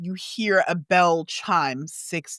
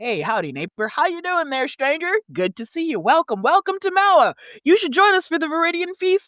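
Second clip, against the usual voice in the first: friendly welcoming villager voice, higher; 11 semitones higher, 4 dB louder than usual. Voicing townspeople greeting a stranger walking into town: welcoming townsfolk voice. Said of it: "You see people are".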